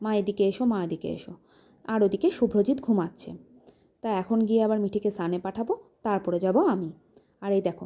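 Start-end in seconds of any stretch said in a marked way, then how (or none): none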